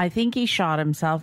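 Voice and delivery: ordinary talk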